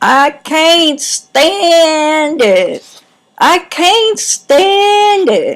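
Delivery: play-acted very high, loud, sing-song pouty child whine. Retelling trudging along, jealous that a sister got carried, acting out whining as a child. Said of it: "I was whiny and pouty".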